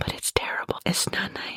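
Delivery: hushed whisper. Calling something terrible, then adding it's not nice, whispering. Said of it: "I don't know why I whispered that".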